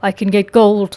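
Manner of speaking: ordinary delivery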